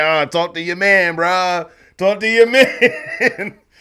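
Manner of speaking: slow, easy, dismissive offhand tone. Retelling a skit where Desi Banks ignores a challenger: imitating Desi Banks brushing someone off. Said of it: "And Desi being like".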